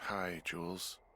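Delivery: low, drowsy, worn-out, sleepy voice. Woken to answer the radio, greeting the caller, tired and sleepy. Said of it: "you sound tired".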